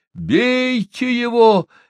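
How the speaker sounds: very high-pitched, desperate shout full of despair. A man in the middle of a brawl calls to the others; shouting in despair. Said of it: "в отчаянии закричал он".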